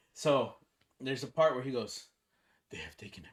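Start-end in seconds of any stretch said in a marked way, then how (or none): 2.7-3.3 low, deep, gravelly rasp, hushed right down. Retelling a scene where he says a line in his deep raspy voice. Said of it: "like in his deep raspy voice".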